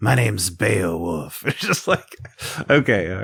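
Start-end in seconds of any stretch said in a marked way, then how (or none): 0.0-1.4 low, raspy voice on one flat note. Mocking a movie's lead character introducing himself: Beowulf one-note raspy voice. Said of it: "that one note throughout every moment".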